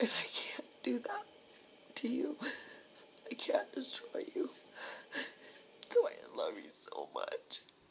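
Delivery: crying through tears, pitch swinging widely. Speaking directly to someone, telling them they love them, crying. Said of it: "I'm sorry I'm crying".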